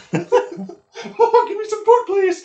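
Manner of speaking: put-on high cartoon mouse voice. Redoing the rat's begging line when asked for Mickey Mouse: Mickey Mouse voice. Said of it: "I think you should have done Mickey Mouse".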